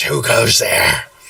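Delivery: sibilant, hissing reptile lizard voice. Voicing a lizard calling from up ahead, in his best lizard voice. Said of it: "I'm trying to make my best lizard voice".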